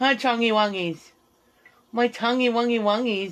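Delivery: put-on gushing, cutesy baby-talk voice. Showing viewers how he talks to animals, the speaker uses his animal voice. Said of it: "That's my animal voice".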